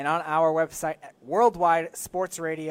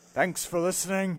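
put-on heroic accent, let out in character; 2 semitones higher than usual. Saying the sign-off after being coached to sound like Thor: Thor accent. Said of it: "Like you're Thor swinging around your hand".

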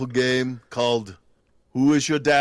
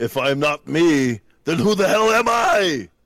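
heavy, laid-on put-on Austrian accent; 4 semitones higher than usual. Playing Arnold quoting his Total Recall line: Arnold Schwarzenegger impression. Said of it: "you were Austrian Arnold your entire career".

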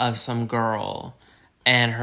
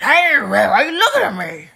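creepy, unhinged, very high, very loud, drawn-out voice; 9 dB louder than usual. Imitating an unhinged stereotype character who comes into a bar. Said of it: "Like that".

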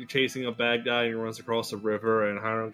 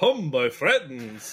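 put-on vampire voice; 2 semitones higher, 3 dB louder than usual. In a role-play, the player voicing Heinrich addresses his friends; Heinrich's vampire voice. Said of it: "why are you talking like that?".

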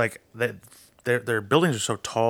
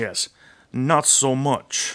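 fake Israeli accent, higher pitch; 4 semitones higher, 4 dB louder than usual. Answering another speaker: put-on Israeli-sounding accent. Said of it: "What is that accent?".

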